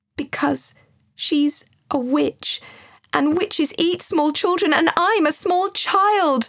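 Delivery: flustered, rattled blurt. A small child answers an unconcerned friend, flustered. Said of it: "flustered Joseph".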